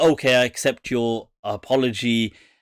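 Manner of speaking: ordinary talk, nothing marked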